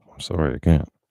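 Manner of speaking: calm, clear, abrupt voice. Retelling the doctor refusing to return a license: imitating doctor saying it calmly. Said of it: "He said it like that. He just said it very clearly, very sudden, calmly".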